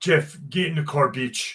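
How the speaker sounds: put-on Czechoslovakian accent. Tell a story and quote your buddy calling to you in his Czechoslovakian voice. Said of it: "in his Czechoslovakian voice".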